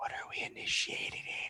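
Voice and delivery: slow, very soft, in-character whisper. Playing a character who asks a nearby companion a question: whisper in character. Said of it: "keep in my voice to whisper".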